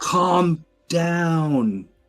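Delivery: acted high yell, stretched long and falling. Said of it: "I'm just gonna yell".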